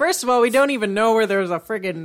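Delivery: ordinary delivery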